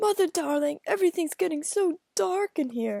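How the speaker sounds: very hoarse put-on voice. Reading a novel aloud, the narrator fakes blindness: very hoarse voice. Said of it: "I said in this very hoarse voice".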